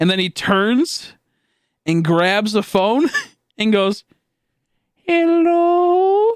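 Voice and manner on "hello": put-on squeaky tiny little girl voice, very high pitched. Retelling a man answering the phone, in his little tiny Mexican girl voice. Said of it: "his little tiny Mexican girl voice".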